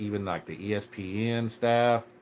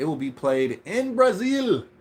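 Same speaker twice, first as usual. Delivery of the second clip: put-on Portuguese accent, pitched very high; 10 semitones higher, 5 dB louder than usual. Speaker announcing tonight's game, in a Portuguese accent. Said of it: "That was my Portuguese accent".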